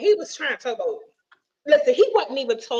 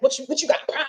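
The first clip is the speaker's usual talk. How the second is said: mock on-the-back-foot, defensive, guarded tone; 2 semitones higher than usual. Retelling how a date answered when questioned: imitating someone getting defensive. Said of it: "he just got defensive".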